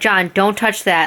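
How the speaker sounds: put-on calm yet loud voice. Retelling own warning to John near a melting part: imitating a calm, loud warning. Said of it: "very calmly and loudly".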